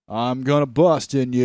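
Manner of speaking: slow, drawn-out put-on voice, every word dragged. Doing a line as an actor playing Genghis Khan: John Wayne voice. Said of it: "that's John Wayne playing Genghis Khan".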